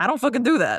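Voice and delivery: put-on New Jersey accent. Retelling the way a man said a line, in a put-on accent. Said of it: "Is this how you feel when my accent comes out?".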